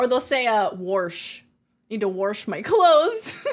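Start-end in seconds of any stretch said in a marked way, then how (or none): 1.9-3.5 slow, put-on Minnesota accent. Showing how people from Minnesota and Wisconsin say words, in a Minnesota accent. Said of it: "you can tell when someone's from like Minnesota, Wisconsin".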